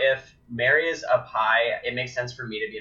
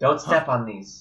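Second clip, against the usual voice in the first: dramatic, sharp, snapping delivery. Retelling a warning to a companion in the game: imitating a snapped warning. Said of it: "snap at him".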